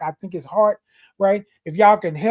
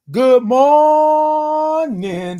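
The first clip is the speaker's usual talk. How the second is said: big forceful full-chested voice, morning drawn out; 6 semitones higher than usual. Advising saying good morning to yourself each morning, said with your whole chest. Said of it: "say it with your whole chest".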